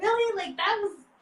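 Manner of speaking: very high, incredulous, exasperated squeal.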